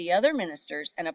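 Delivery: ordinary delivery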